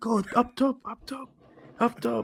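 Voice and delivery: put-on very high, high-pitched repeated shouting. Retelling the manager shouting at a player to go up top: imitating Arteta shouting. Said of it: "And Arteta's shouting at him".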